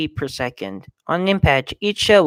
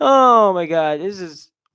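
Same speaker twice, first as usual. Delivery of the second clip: words breaking up into laughter mid-sentence; 3 semitones higher than usual. Reacting to a description of a Mars lander, laughing. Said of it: "I'm laughing at this".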